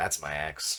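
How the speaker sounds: mock very soft, quiet, calm, utterly unbothered. Retelling what a man said after his ex hit the car, imitating a calm reply. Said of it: "Really calmly".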